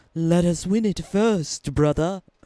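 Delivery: put-on loose, approximate British accent. Repeating a game character's line, imitating a British-sounding accent. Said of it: "Why is it so Britishy?".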